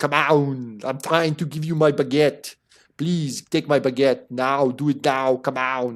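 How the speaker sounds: put-on French-accented voice. Offering a baguette to a raider: French Arnold voice. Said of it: "I'm going to be a French Arnold".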